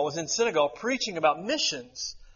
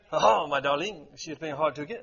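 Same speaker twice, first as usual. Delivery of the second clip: cartoon French accent, pitched lower; 2 semitones lower than usual. Asking the audience who learned French from cartoons, in a Pepe Le Pew French accent. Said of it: "Pepe Le Pew from Looney Tunes".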